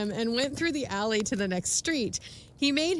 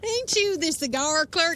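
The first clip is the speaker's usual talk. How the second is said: put-on country hillbilly accent, pitched up; 5 semitones higher than usual. Performing a drunk character's lines, the speaker switches to a hillbilly voice. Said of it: "switch slightly from drunk to, to hillbilly".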